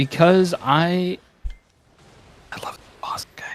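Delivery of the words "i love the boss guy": very slow, drawn-out, pushed stage whisper. Answering how they knew about the boss fight: whispering. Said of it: "Why did you whisper like that?".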